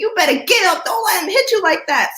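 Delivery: mock frantic, very high, loud screaming. Recalling getting hit in a game, the speaker quotes mom from the sideline: imitating mom screaming. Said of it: "And my mom's screaming".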